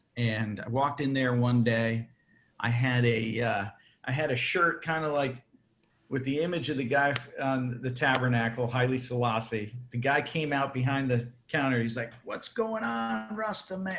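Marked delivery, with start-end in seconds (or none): 12.3-14.0 put-on thick Italian accent, very high and soft. Retelling a shop worker greeting him from behind the counter, thick Italian accent. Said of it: "He had a very thick Italian accent".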